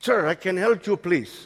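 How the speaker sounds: put-on thick Spanish accent. Retelling what a waiter said to him, in a thick spanish accent. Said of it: "Thick Spanish accent".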